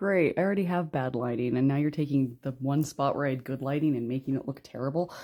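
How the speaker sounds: ordinary talk, nothing marked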